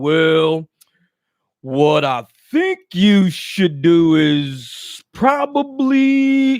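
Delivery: very slow, plodding, stretched-out speech. Mocking people who talk slow, imitating someone talking slow. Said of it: "motherfuckers that talk slow like".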